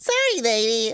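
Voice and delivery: put-on high, small, little child's voice. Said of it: "I is a real child's voice".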